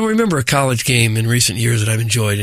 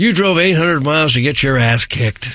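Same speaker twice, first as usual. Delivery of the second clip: ordinary talk, nothing marked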